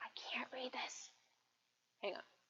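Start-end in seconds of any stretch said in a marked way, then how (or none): 0.0-1.1 put-on hushed, slow, whispery little old lady voice. Speaker without her glasses, unable to read the computer screen, little old lady voice. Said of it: "sitting here like a little old lady going".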